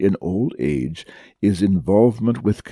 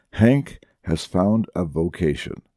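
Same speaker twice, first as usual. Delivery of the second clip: ordinary delivery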